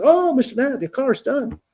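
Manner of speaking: mock perky, bright, very high chirpy cashier voice. Retelling picking up his car, quoting the cashier: imitating a chirpy cashier. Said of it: "she's all chirpy".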